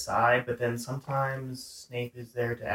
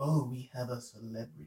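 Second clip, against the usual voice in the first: soft, quiet, sneering teacher voice; 6 dB quieter than usual. Retelling Harry's first class, where the teacher singles him out, doing a Snape impression. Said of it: "That was a nice Snape impression".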